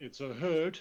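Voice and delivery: shouting in a character voice. Acting a character's words during combat: in-character scream. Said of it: "And I'll scream".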